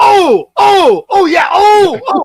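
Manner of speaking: very high, very loud, very slow drawn-out emoting oohs. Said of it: "the way that you are just emoting".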